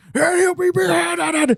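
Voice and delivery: overacted drawn-out yell, very high pitch, slow. Retelling a film scene: imitating Corbin Bernsen yelling. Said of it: "yelling and screaming".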